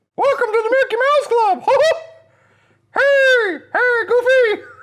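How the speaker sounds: squeaked out high and loud. Doing the voice that everybody is waiting for: Mickey Mouse voice. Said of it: "Stan Lee sounds like Mickey Mouse".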